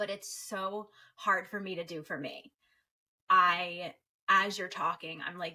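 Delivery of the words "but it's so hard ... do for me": tearful, near tears, feeling welling up. Talking with a guest about celebrating ourselves, the speaker is getting emotional. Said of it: "Here comes the emotion".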